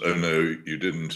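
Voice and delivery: ordinary talk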